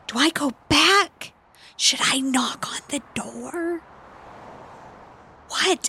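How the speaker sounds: slow, hushed whisper-yell. Voicing a character signalling across to another player: whisper-yelling. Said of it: "whisper yell at him".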